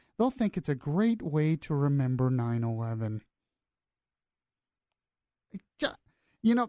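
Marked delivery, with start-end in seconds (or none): none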